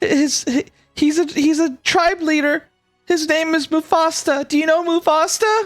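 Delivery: very high, tearful, crying voice. A game master's character who ran from her group asks about her father, crying plea. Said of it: "She cries as she like hugs your leg".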